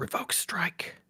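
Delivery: hushed whisper. Player in a game speaking privately to Cassie, whispering. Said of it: "And I whisper to Cassie".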